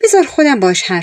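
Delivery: plain reading voice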